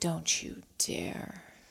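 very quiet muttered whisper under the breath. Speaking in character to a frozen, terrified enemy: whispering under breath. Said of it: "whispering under my breath".

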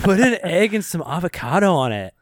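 put-on Californian accent. Riffing with others on a famous California saying, in a Californian accent. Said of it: "I'm sounding like a Californian".

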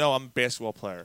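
ordinary delivery

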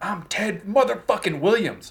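play-acted very high-pitched, drawn-out screaming. Telling how a ballplayer screamed at nobody in batting practice: retelling a scream. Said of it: "He would just scream at nobody".

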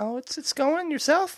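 high-pitched voice. Answering a greeting at the start of the show, in a high-pitched tone. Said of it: "in such a high pitched tone".

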